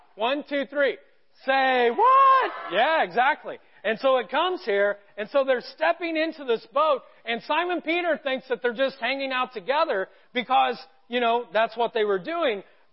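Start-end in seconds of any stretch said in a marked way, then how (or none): 1.5-2.5 very high, loud exclamation at top of range. Leading a group to practice saying a phrase together: highest-pitched voice. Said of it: "in your highest pitched voice".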